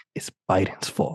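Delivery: hushed whisper under the breath. Retelling how a stranger leaned close and whispered a claim: imitating someone whispering.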